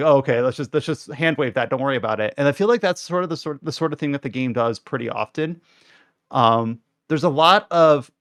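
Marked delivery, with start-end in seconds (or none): none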